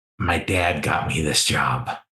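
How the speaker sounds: very quiet voice. A character leans in to a senior student from his old school: speaking very quietly. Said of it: "speaks very quietly".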